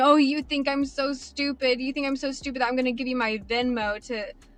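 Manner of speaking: acted, scornful mocking laughter. Retelling what he said while laughing at the speaker, imitating mocking laughter. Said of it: "but he was laughing at me".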